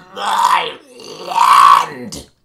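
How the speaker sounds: very loud, low, rough, gurgled cry. A storyteller voices a man with blood in his mouth, gurgling out the words. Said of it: "he gurgles out".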